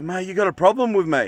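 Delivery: put-on tough, confrontational, squaring-up tone. Retelling confronting another driver at his car: retelling a confrontational challenge. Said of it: "with my ginger stare".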